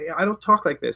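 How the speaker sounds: ordinary talk, nothing marked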